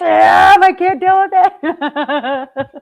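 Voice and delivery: play-acted high, very slow, dragged-out yelling. Retelling own reaction to sam: imitating own yelling. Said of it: "I start yelling, and I'm like".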